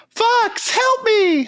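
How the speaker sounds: very high, put-on cartoon toad sidekick voice. Asked to do a character voice, using a Slippy Toad voice. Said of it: "do you want me to do a Slippy Toad voice for you?".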